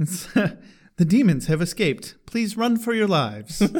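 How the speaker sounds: robotic automated computer announcer voice. Recounting a scene from a show, doing the computer voice. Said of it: "the computer voice".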